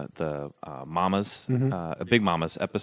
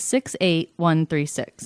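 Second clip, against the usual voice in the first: put-on lady announcer voice, much higher and louder; 9 semitones higher, 4 dB louder than usual. Asked to imitate the Faturday lady for the zip code: Faturday lady imitation. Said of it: "do an imitation of the Faturday lady".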